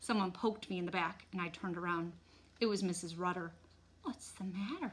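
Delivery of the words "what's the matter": soft, hushed stage half-whisper. Mrs. rudder pokes the narrator from behind and asks: half-whispering. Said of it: "she whispered".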